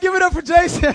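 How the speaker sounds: high, loud, excited hype shout.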